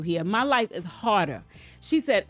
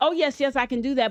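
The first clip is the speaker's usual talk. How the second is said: mock keen, overly agreeable yes-man tone; 4 semitones higher than usual. Retelling how he agrees to help: imitating overly agreeable promising. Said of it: "he's super agreeable".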